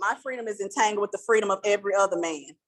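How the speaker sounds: ordinary delivery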